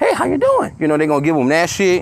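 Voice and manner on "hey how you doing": very high-pitched voice with bass stripped out. Imitating people who change their voice up: voice without bass. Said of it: "They gonna take the bass out of their voice".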